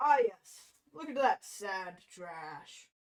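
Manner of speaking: put-on mocking voice. Speaker mocks a phrasing he finds silly, mocking put-on voice. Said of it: "You go".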